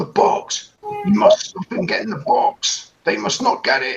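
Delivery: very high-pitched guard character voice. As narrator of a roleplaying game, voicing the gold armored guy: shouting. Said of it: "The gold armored guy shouts".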